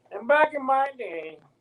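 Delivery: put-on very high-pitched old codger voice. Joking about passing on lessons to younger athletes: imitating an old guy. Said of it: "I just sound like that old, old guy going".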